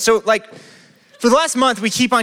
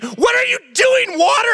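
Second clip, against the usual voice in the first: put-on shrieking scream, high, shouted and exasperated. Retelling yelling at overflowing water, retelling own scream. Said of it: "And I'm screaming".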